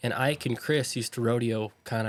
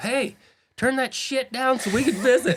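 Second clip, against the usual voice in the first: mock very high, loud screaming; 13 semitones higher, 5 dB louder than usual. Retelling how someone walked up mid sound check: imitating someone screaming. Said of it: "just screams at him".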